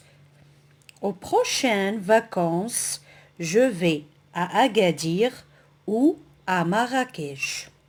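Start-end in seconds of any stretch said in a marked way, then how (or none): 1.0-7.6 slow, careful, deliberate reading aloud. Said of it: "on va lire le corpus".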